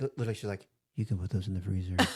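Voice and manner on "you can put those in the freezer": low, super creepy, eerie, unsettling voice. Retelling what a woman said to them, imitating a super creepy voice. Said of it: "she said it in like this super creepy voice".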